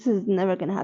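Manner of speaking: normal talking voice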